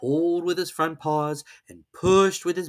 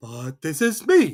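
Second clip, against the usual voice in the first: astonished, wondering, slow, very surprised voice; 3 dB louder than usual. Reading a story aloud, voicing Pooh answering: very surprised. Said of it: "very much surprised".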